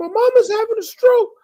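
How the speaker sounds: crying and frantic, very high-pitched sobbing. Retelling what a woman said about her mother's stroke: imitating frantic crying. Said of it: "She's like she's crying, she's frantic".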